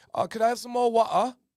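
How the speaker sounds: very high, loud, put-on British accent. Retelling what they say after talking to a british soccer coach: imitating a british accent. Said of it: "so hard not to talk like him".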